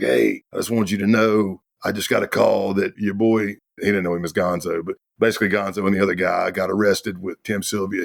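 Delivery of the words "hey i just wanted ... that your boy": put-on groggy, half-asleep voice. Retelling a phone call from someone half asleep: imitating a groggy voice. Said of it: "his voice is all groggy".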